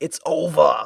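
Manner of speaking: put-on anime voice with Boston accent. Host recreating the character's episode-ending voice clip, in a Bostonian anime voice. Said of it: "in the most Bostonian uh, anime voice".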